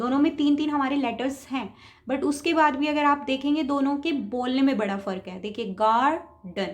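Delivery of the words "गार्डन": gar in garden stressed, louder and longer. Teaching english pronunciation in hindi, say garden with stress on gar. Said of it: "गार जो आपने बोला है थोड़ा आराम से बोला और थोड़ा जोर दे के बोला है".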